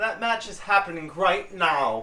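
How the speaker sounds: put-on British accent. Asked by the other speaker for a Paige voice, doing a Paige voice with British accent. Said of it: "You're gonna say the British accent".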